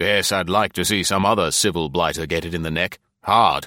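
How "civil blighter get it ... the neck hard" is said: ordinary delivery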